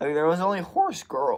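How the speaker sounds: loud voice crack mid-line. Talking casually to listeners, voice cracking mid-sentence. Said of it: "you hear that voice crack?".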